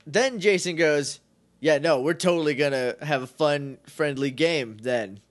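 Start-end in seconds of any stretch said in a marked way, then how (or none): none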